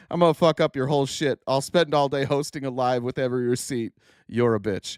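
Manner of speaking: usual speaking voice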